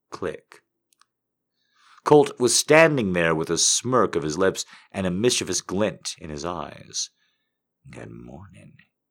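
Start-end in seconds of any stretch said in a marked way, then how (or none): 7.9-8.8 very low, hushed, husky murmur. Colt, standing at the locked door, speaks to Flannery in a husky voice. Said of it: "he said in a husky voice".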